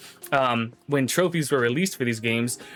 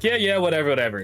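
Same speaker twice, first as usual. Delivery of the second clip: offhand, can't-be-bothered, dismissive brush-off tone; 3 semitones higher than usual. Retelling how their mom reacted, mimicking a dismissive mom. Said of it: "my mom was very dismissive".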